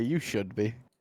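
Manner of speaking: cool, self-assured, menacing and intimidating delivery. In character, staring a fighter down before a bout: intimidating, said with a big smile. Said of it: "with just a big smile on my face".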